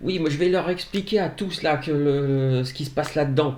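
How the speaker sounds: agitated, high, riled-up ranting voice. Retelling a man turning toward an empty street, imitating a man shouting. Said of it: "il commence à gueuler".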